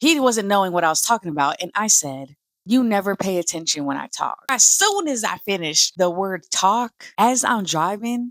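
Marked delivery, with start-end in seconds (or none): 2.6-4.4 acted, dry, snide, sarcastic tone. Retelling a remark she made to her boyfriend while driving: imitating her own sarcastic remark. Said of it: "I told him sarcastically".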